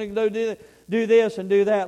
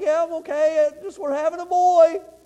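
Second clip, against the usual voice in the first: acted, teary, crying, high-pitched voice; 8 semitones higher, 4 dB louder than usual. Retelling his wife's phone call from work: imitating his wife crying. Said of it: "and she's crying".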